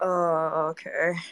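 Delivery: tired, drained, exhausted, worn-out delivery. Back after stopping mid-chat to take supplements, answering, exhausted. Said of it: "You sound so exhausted".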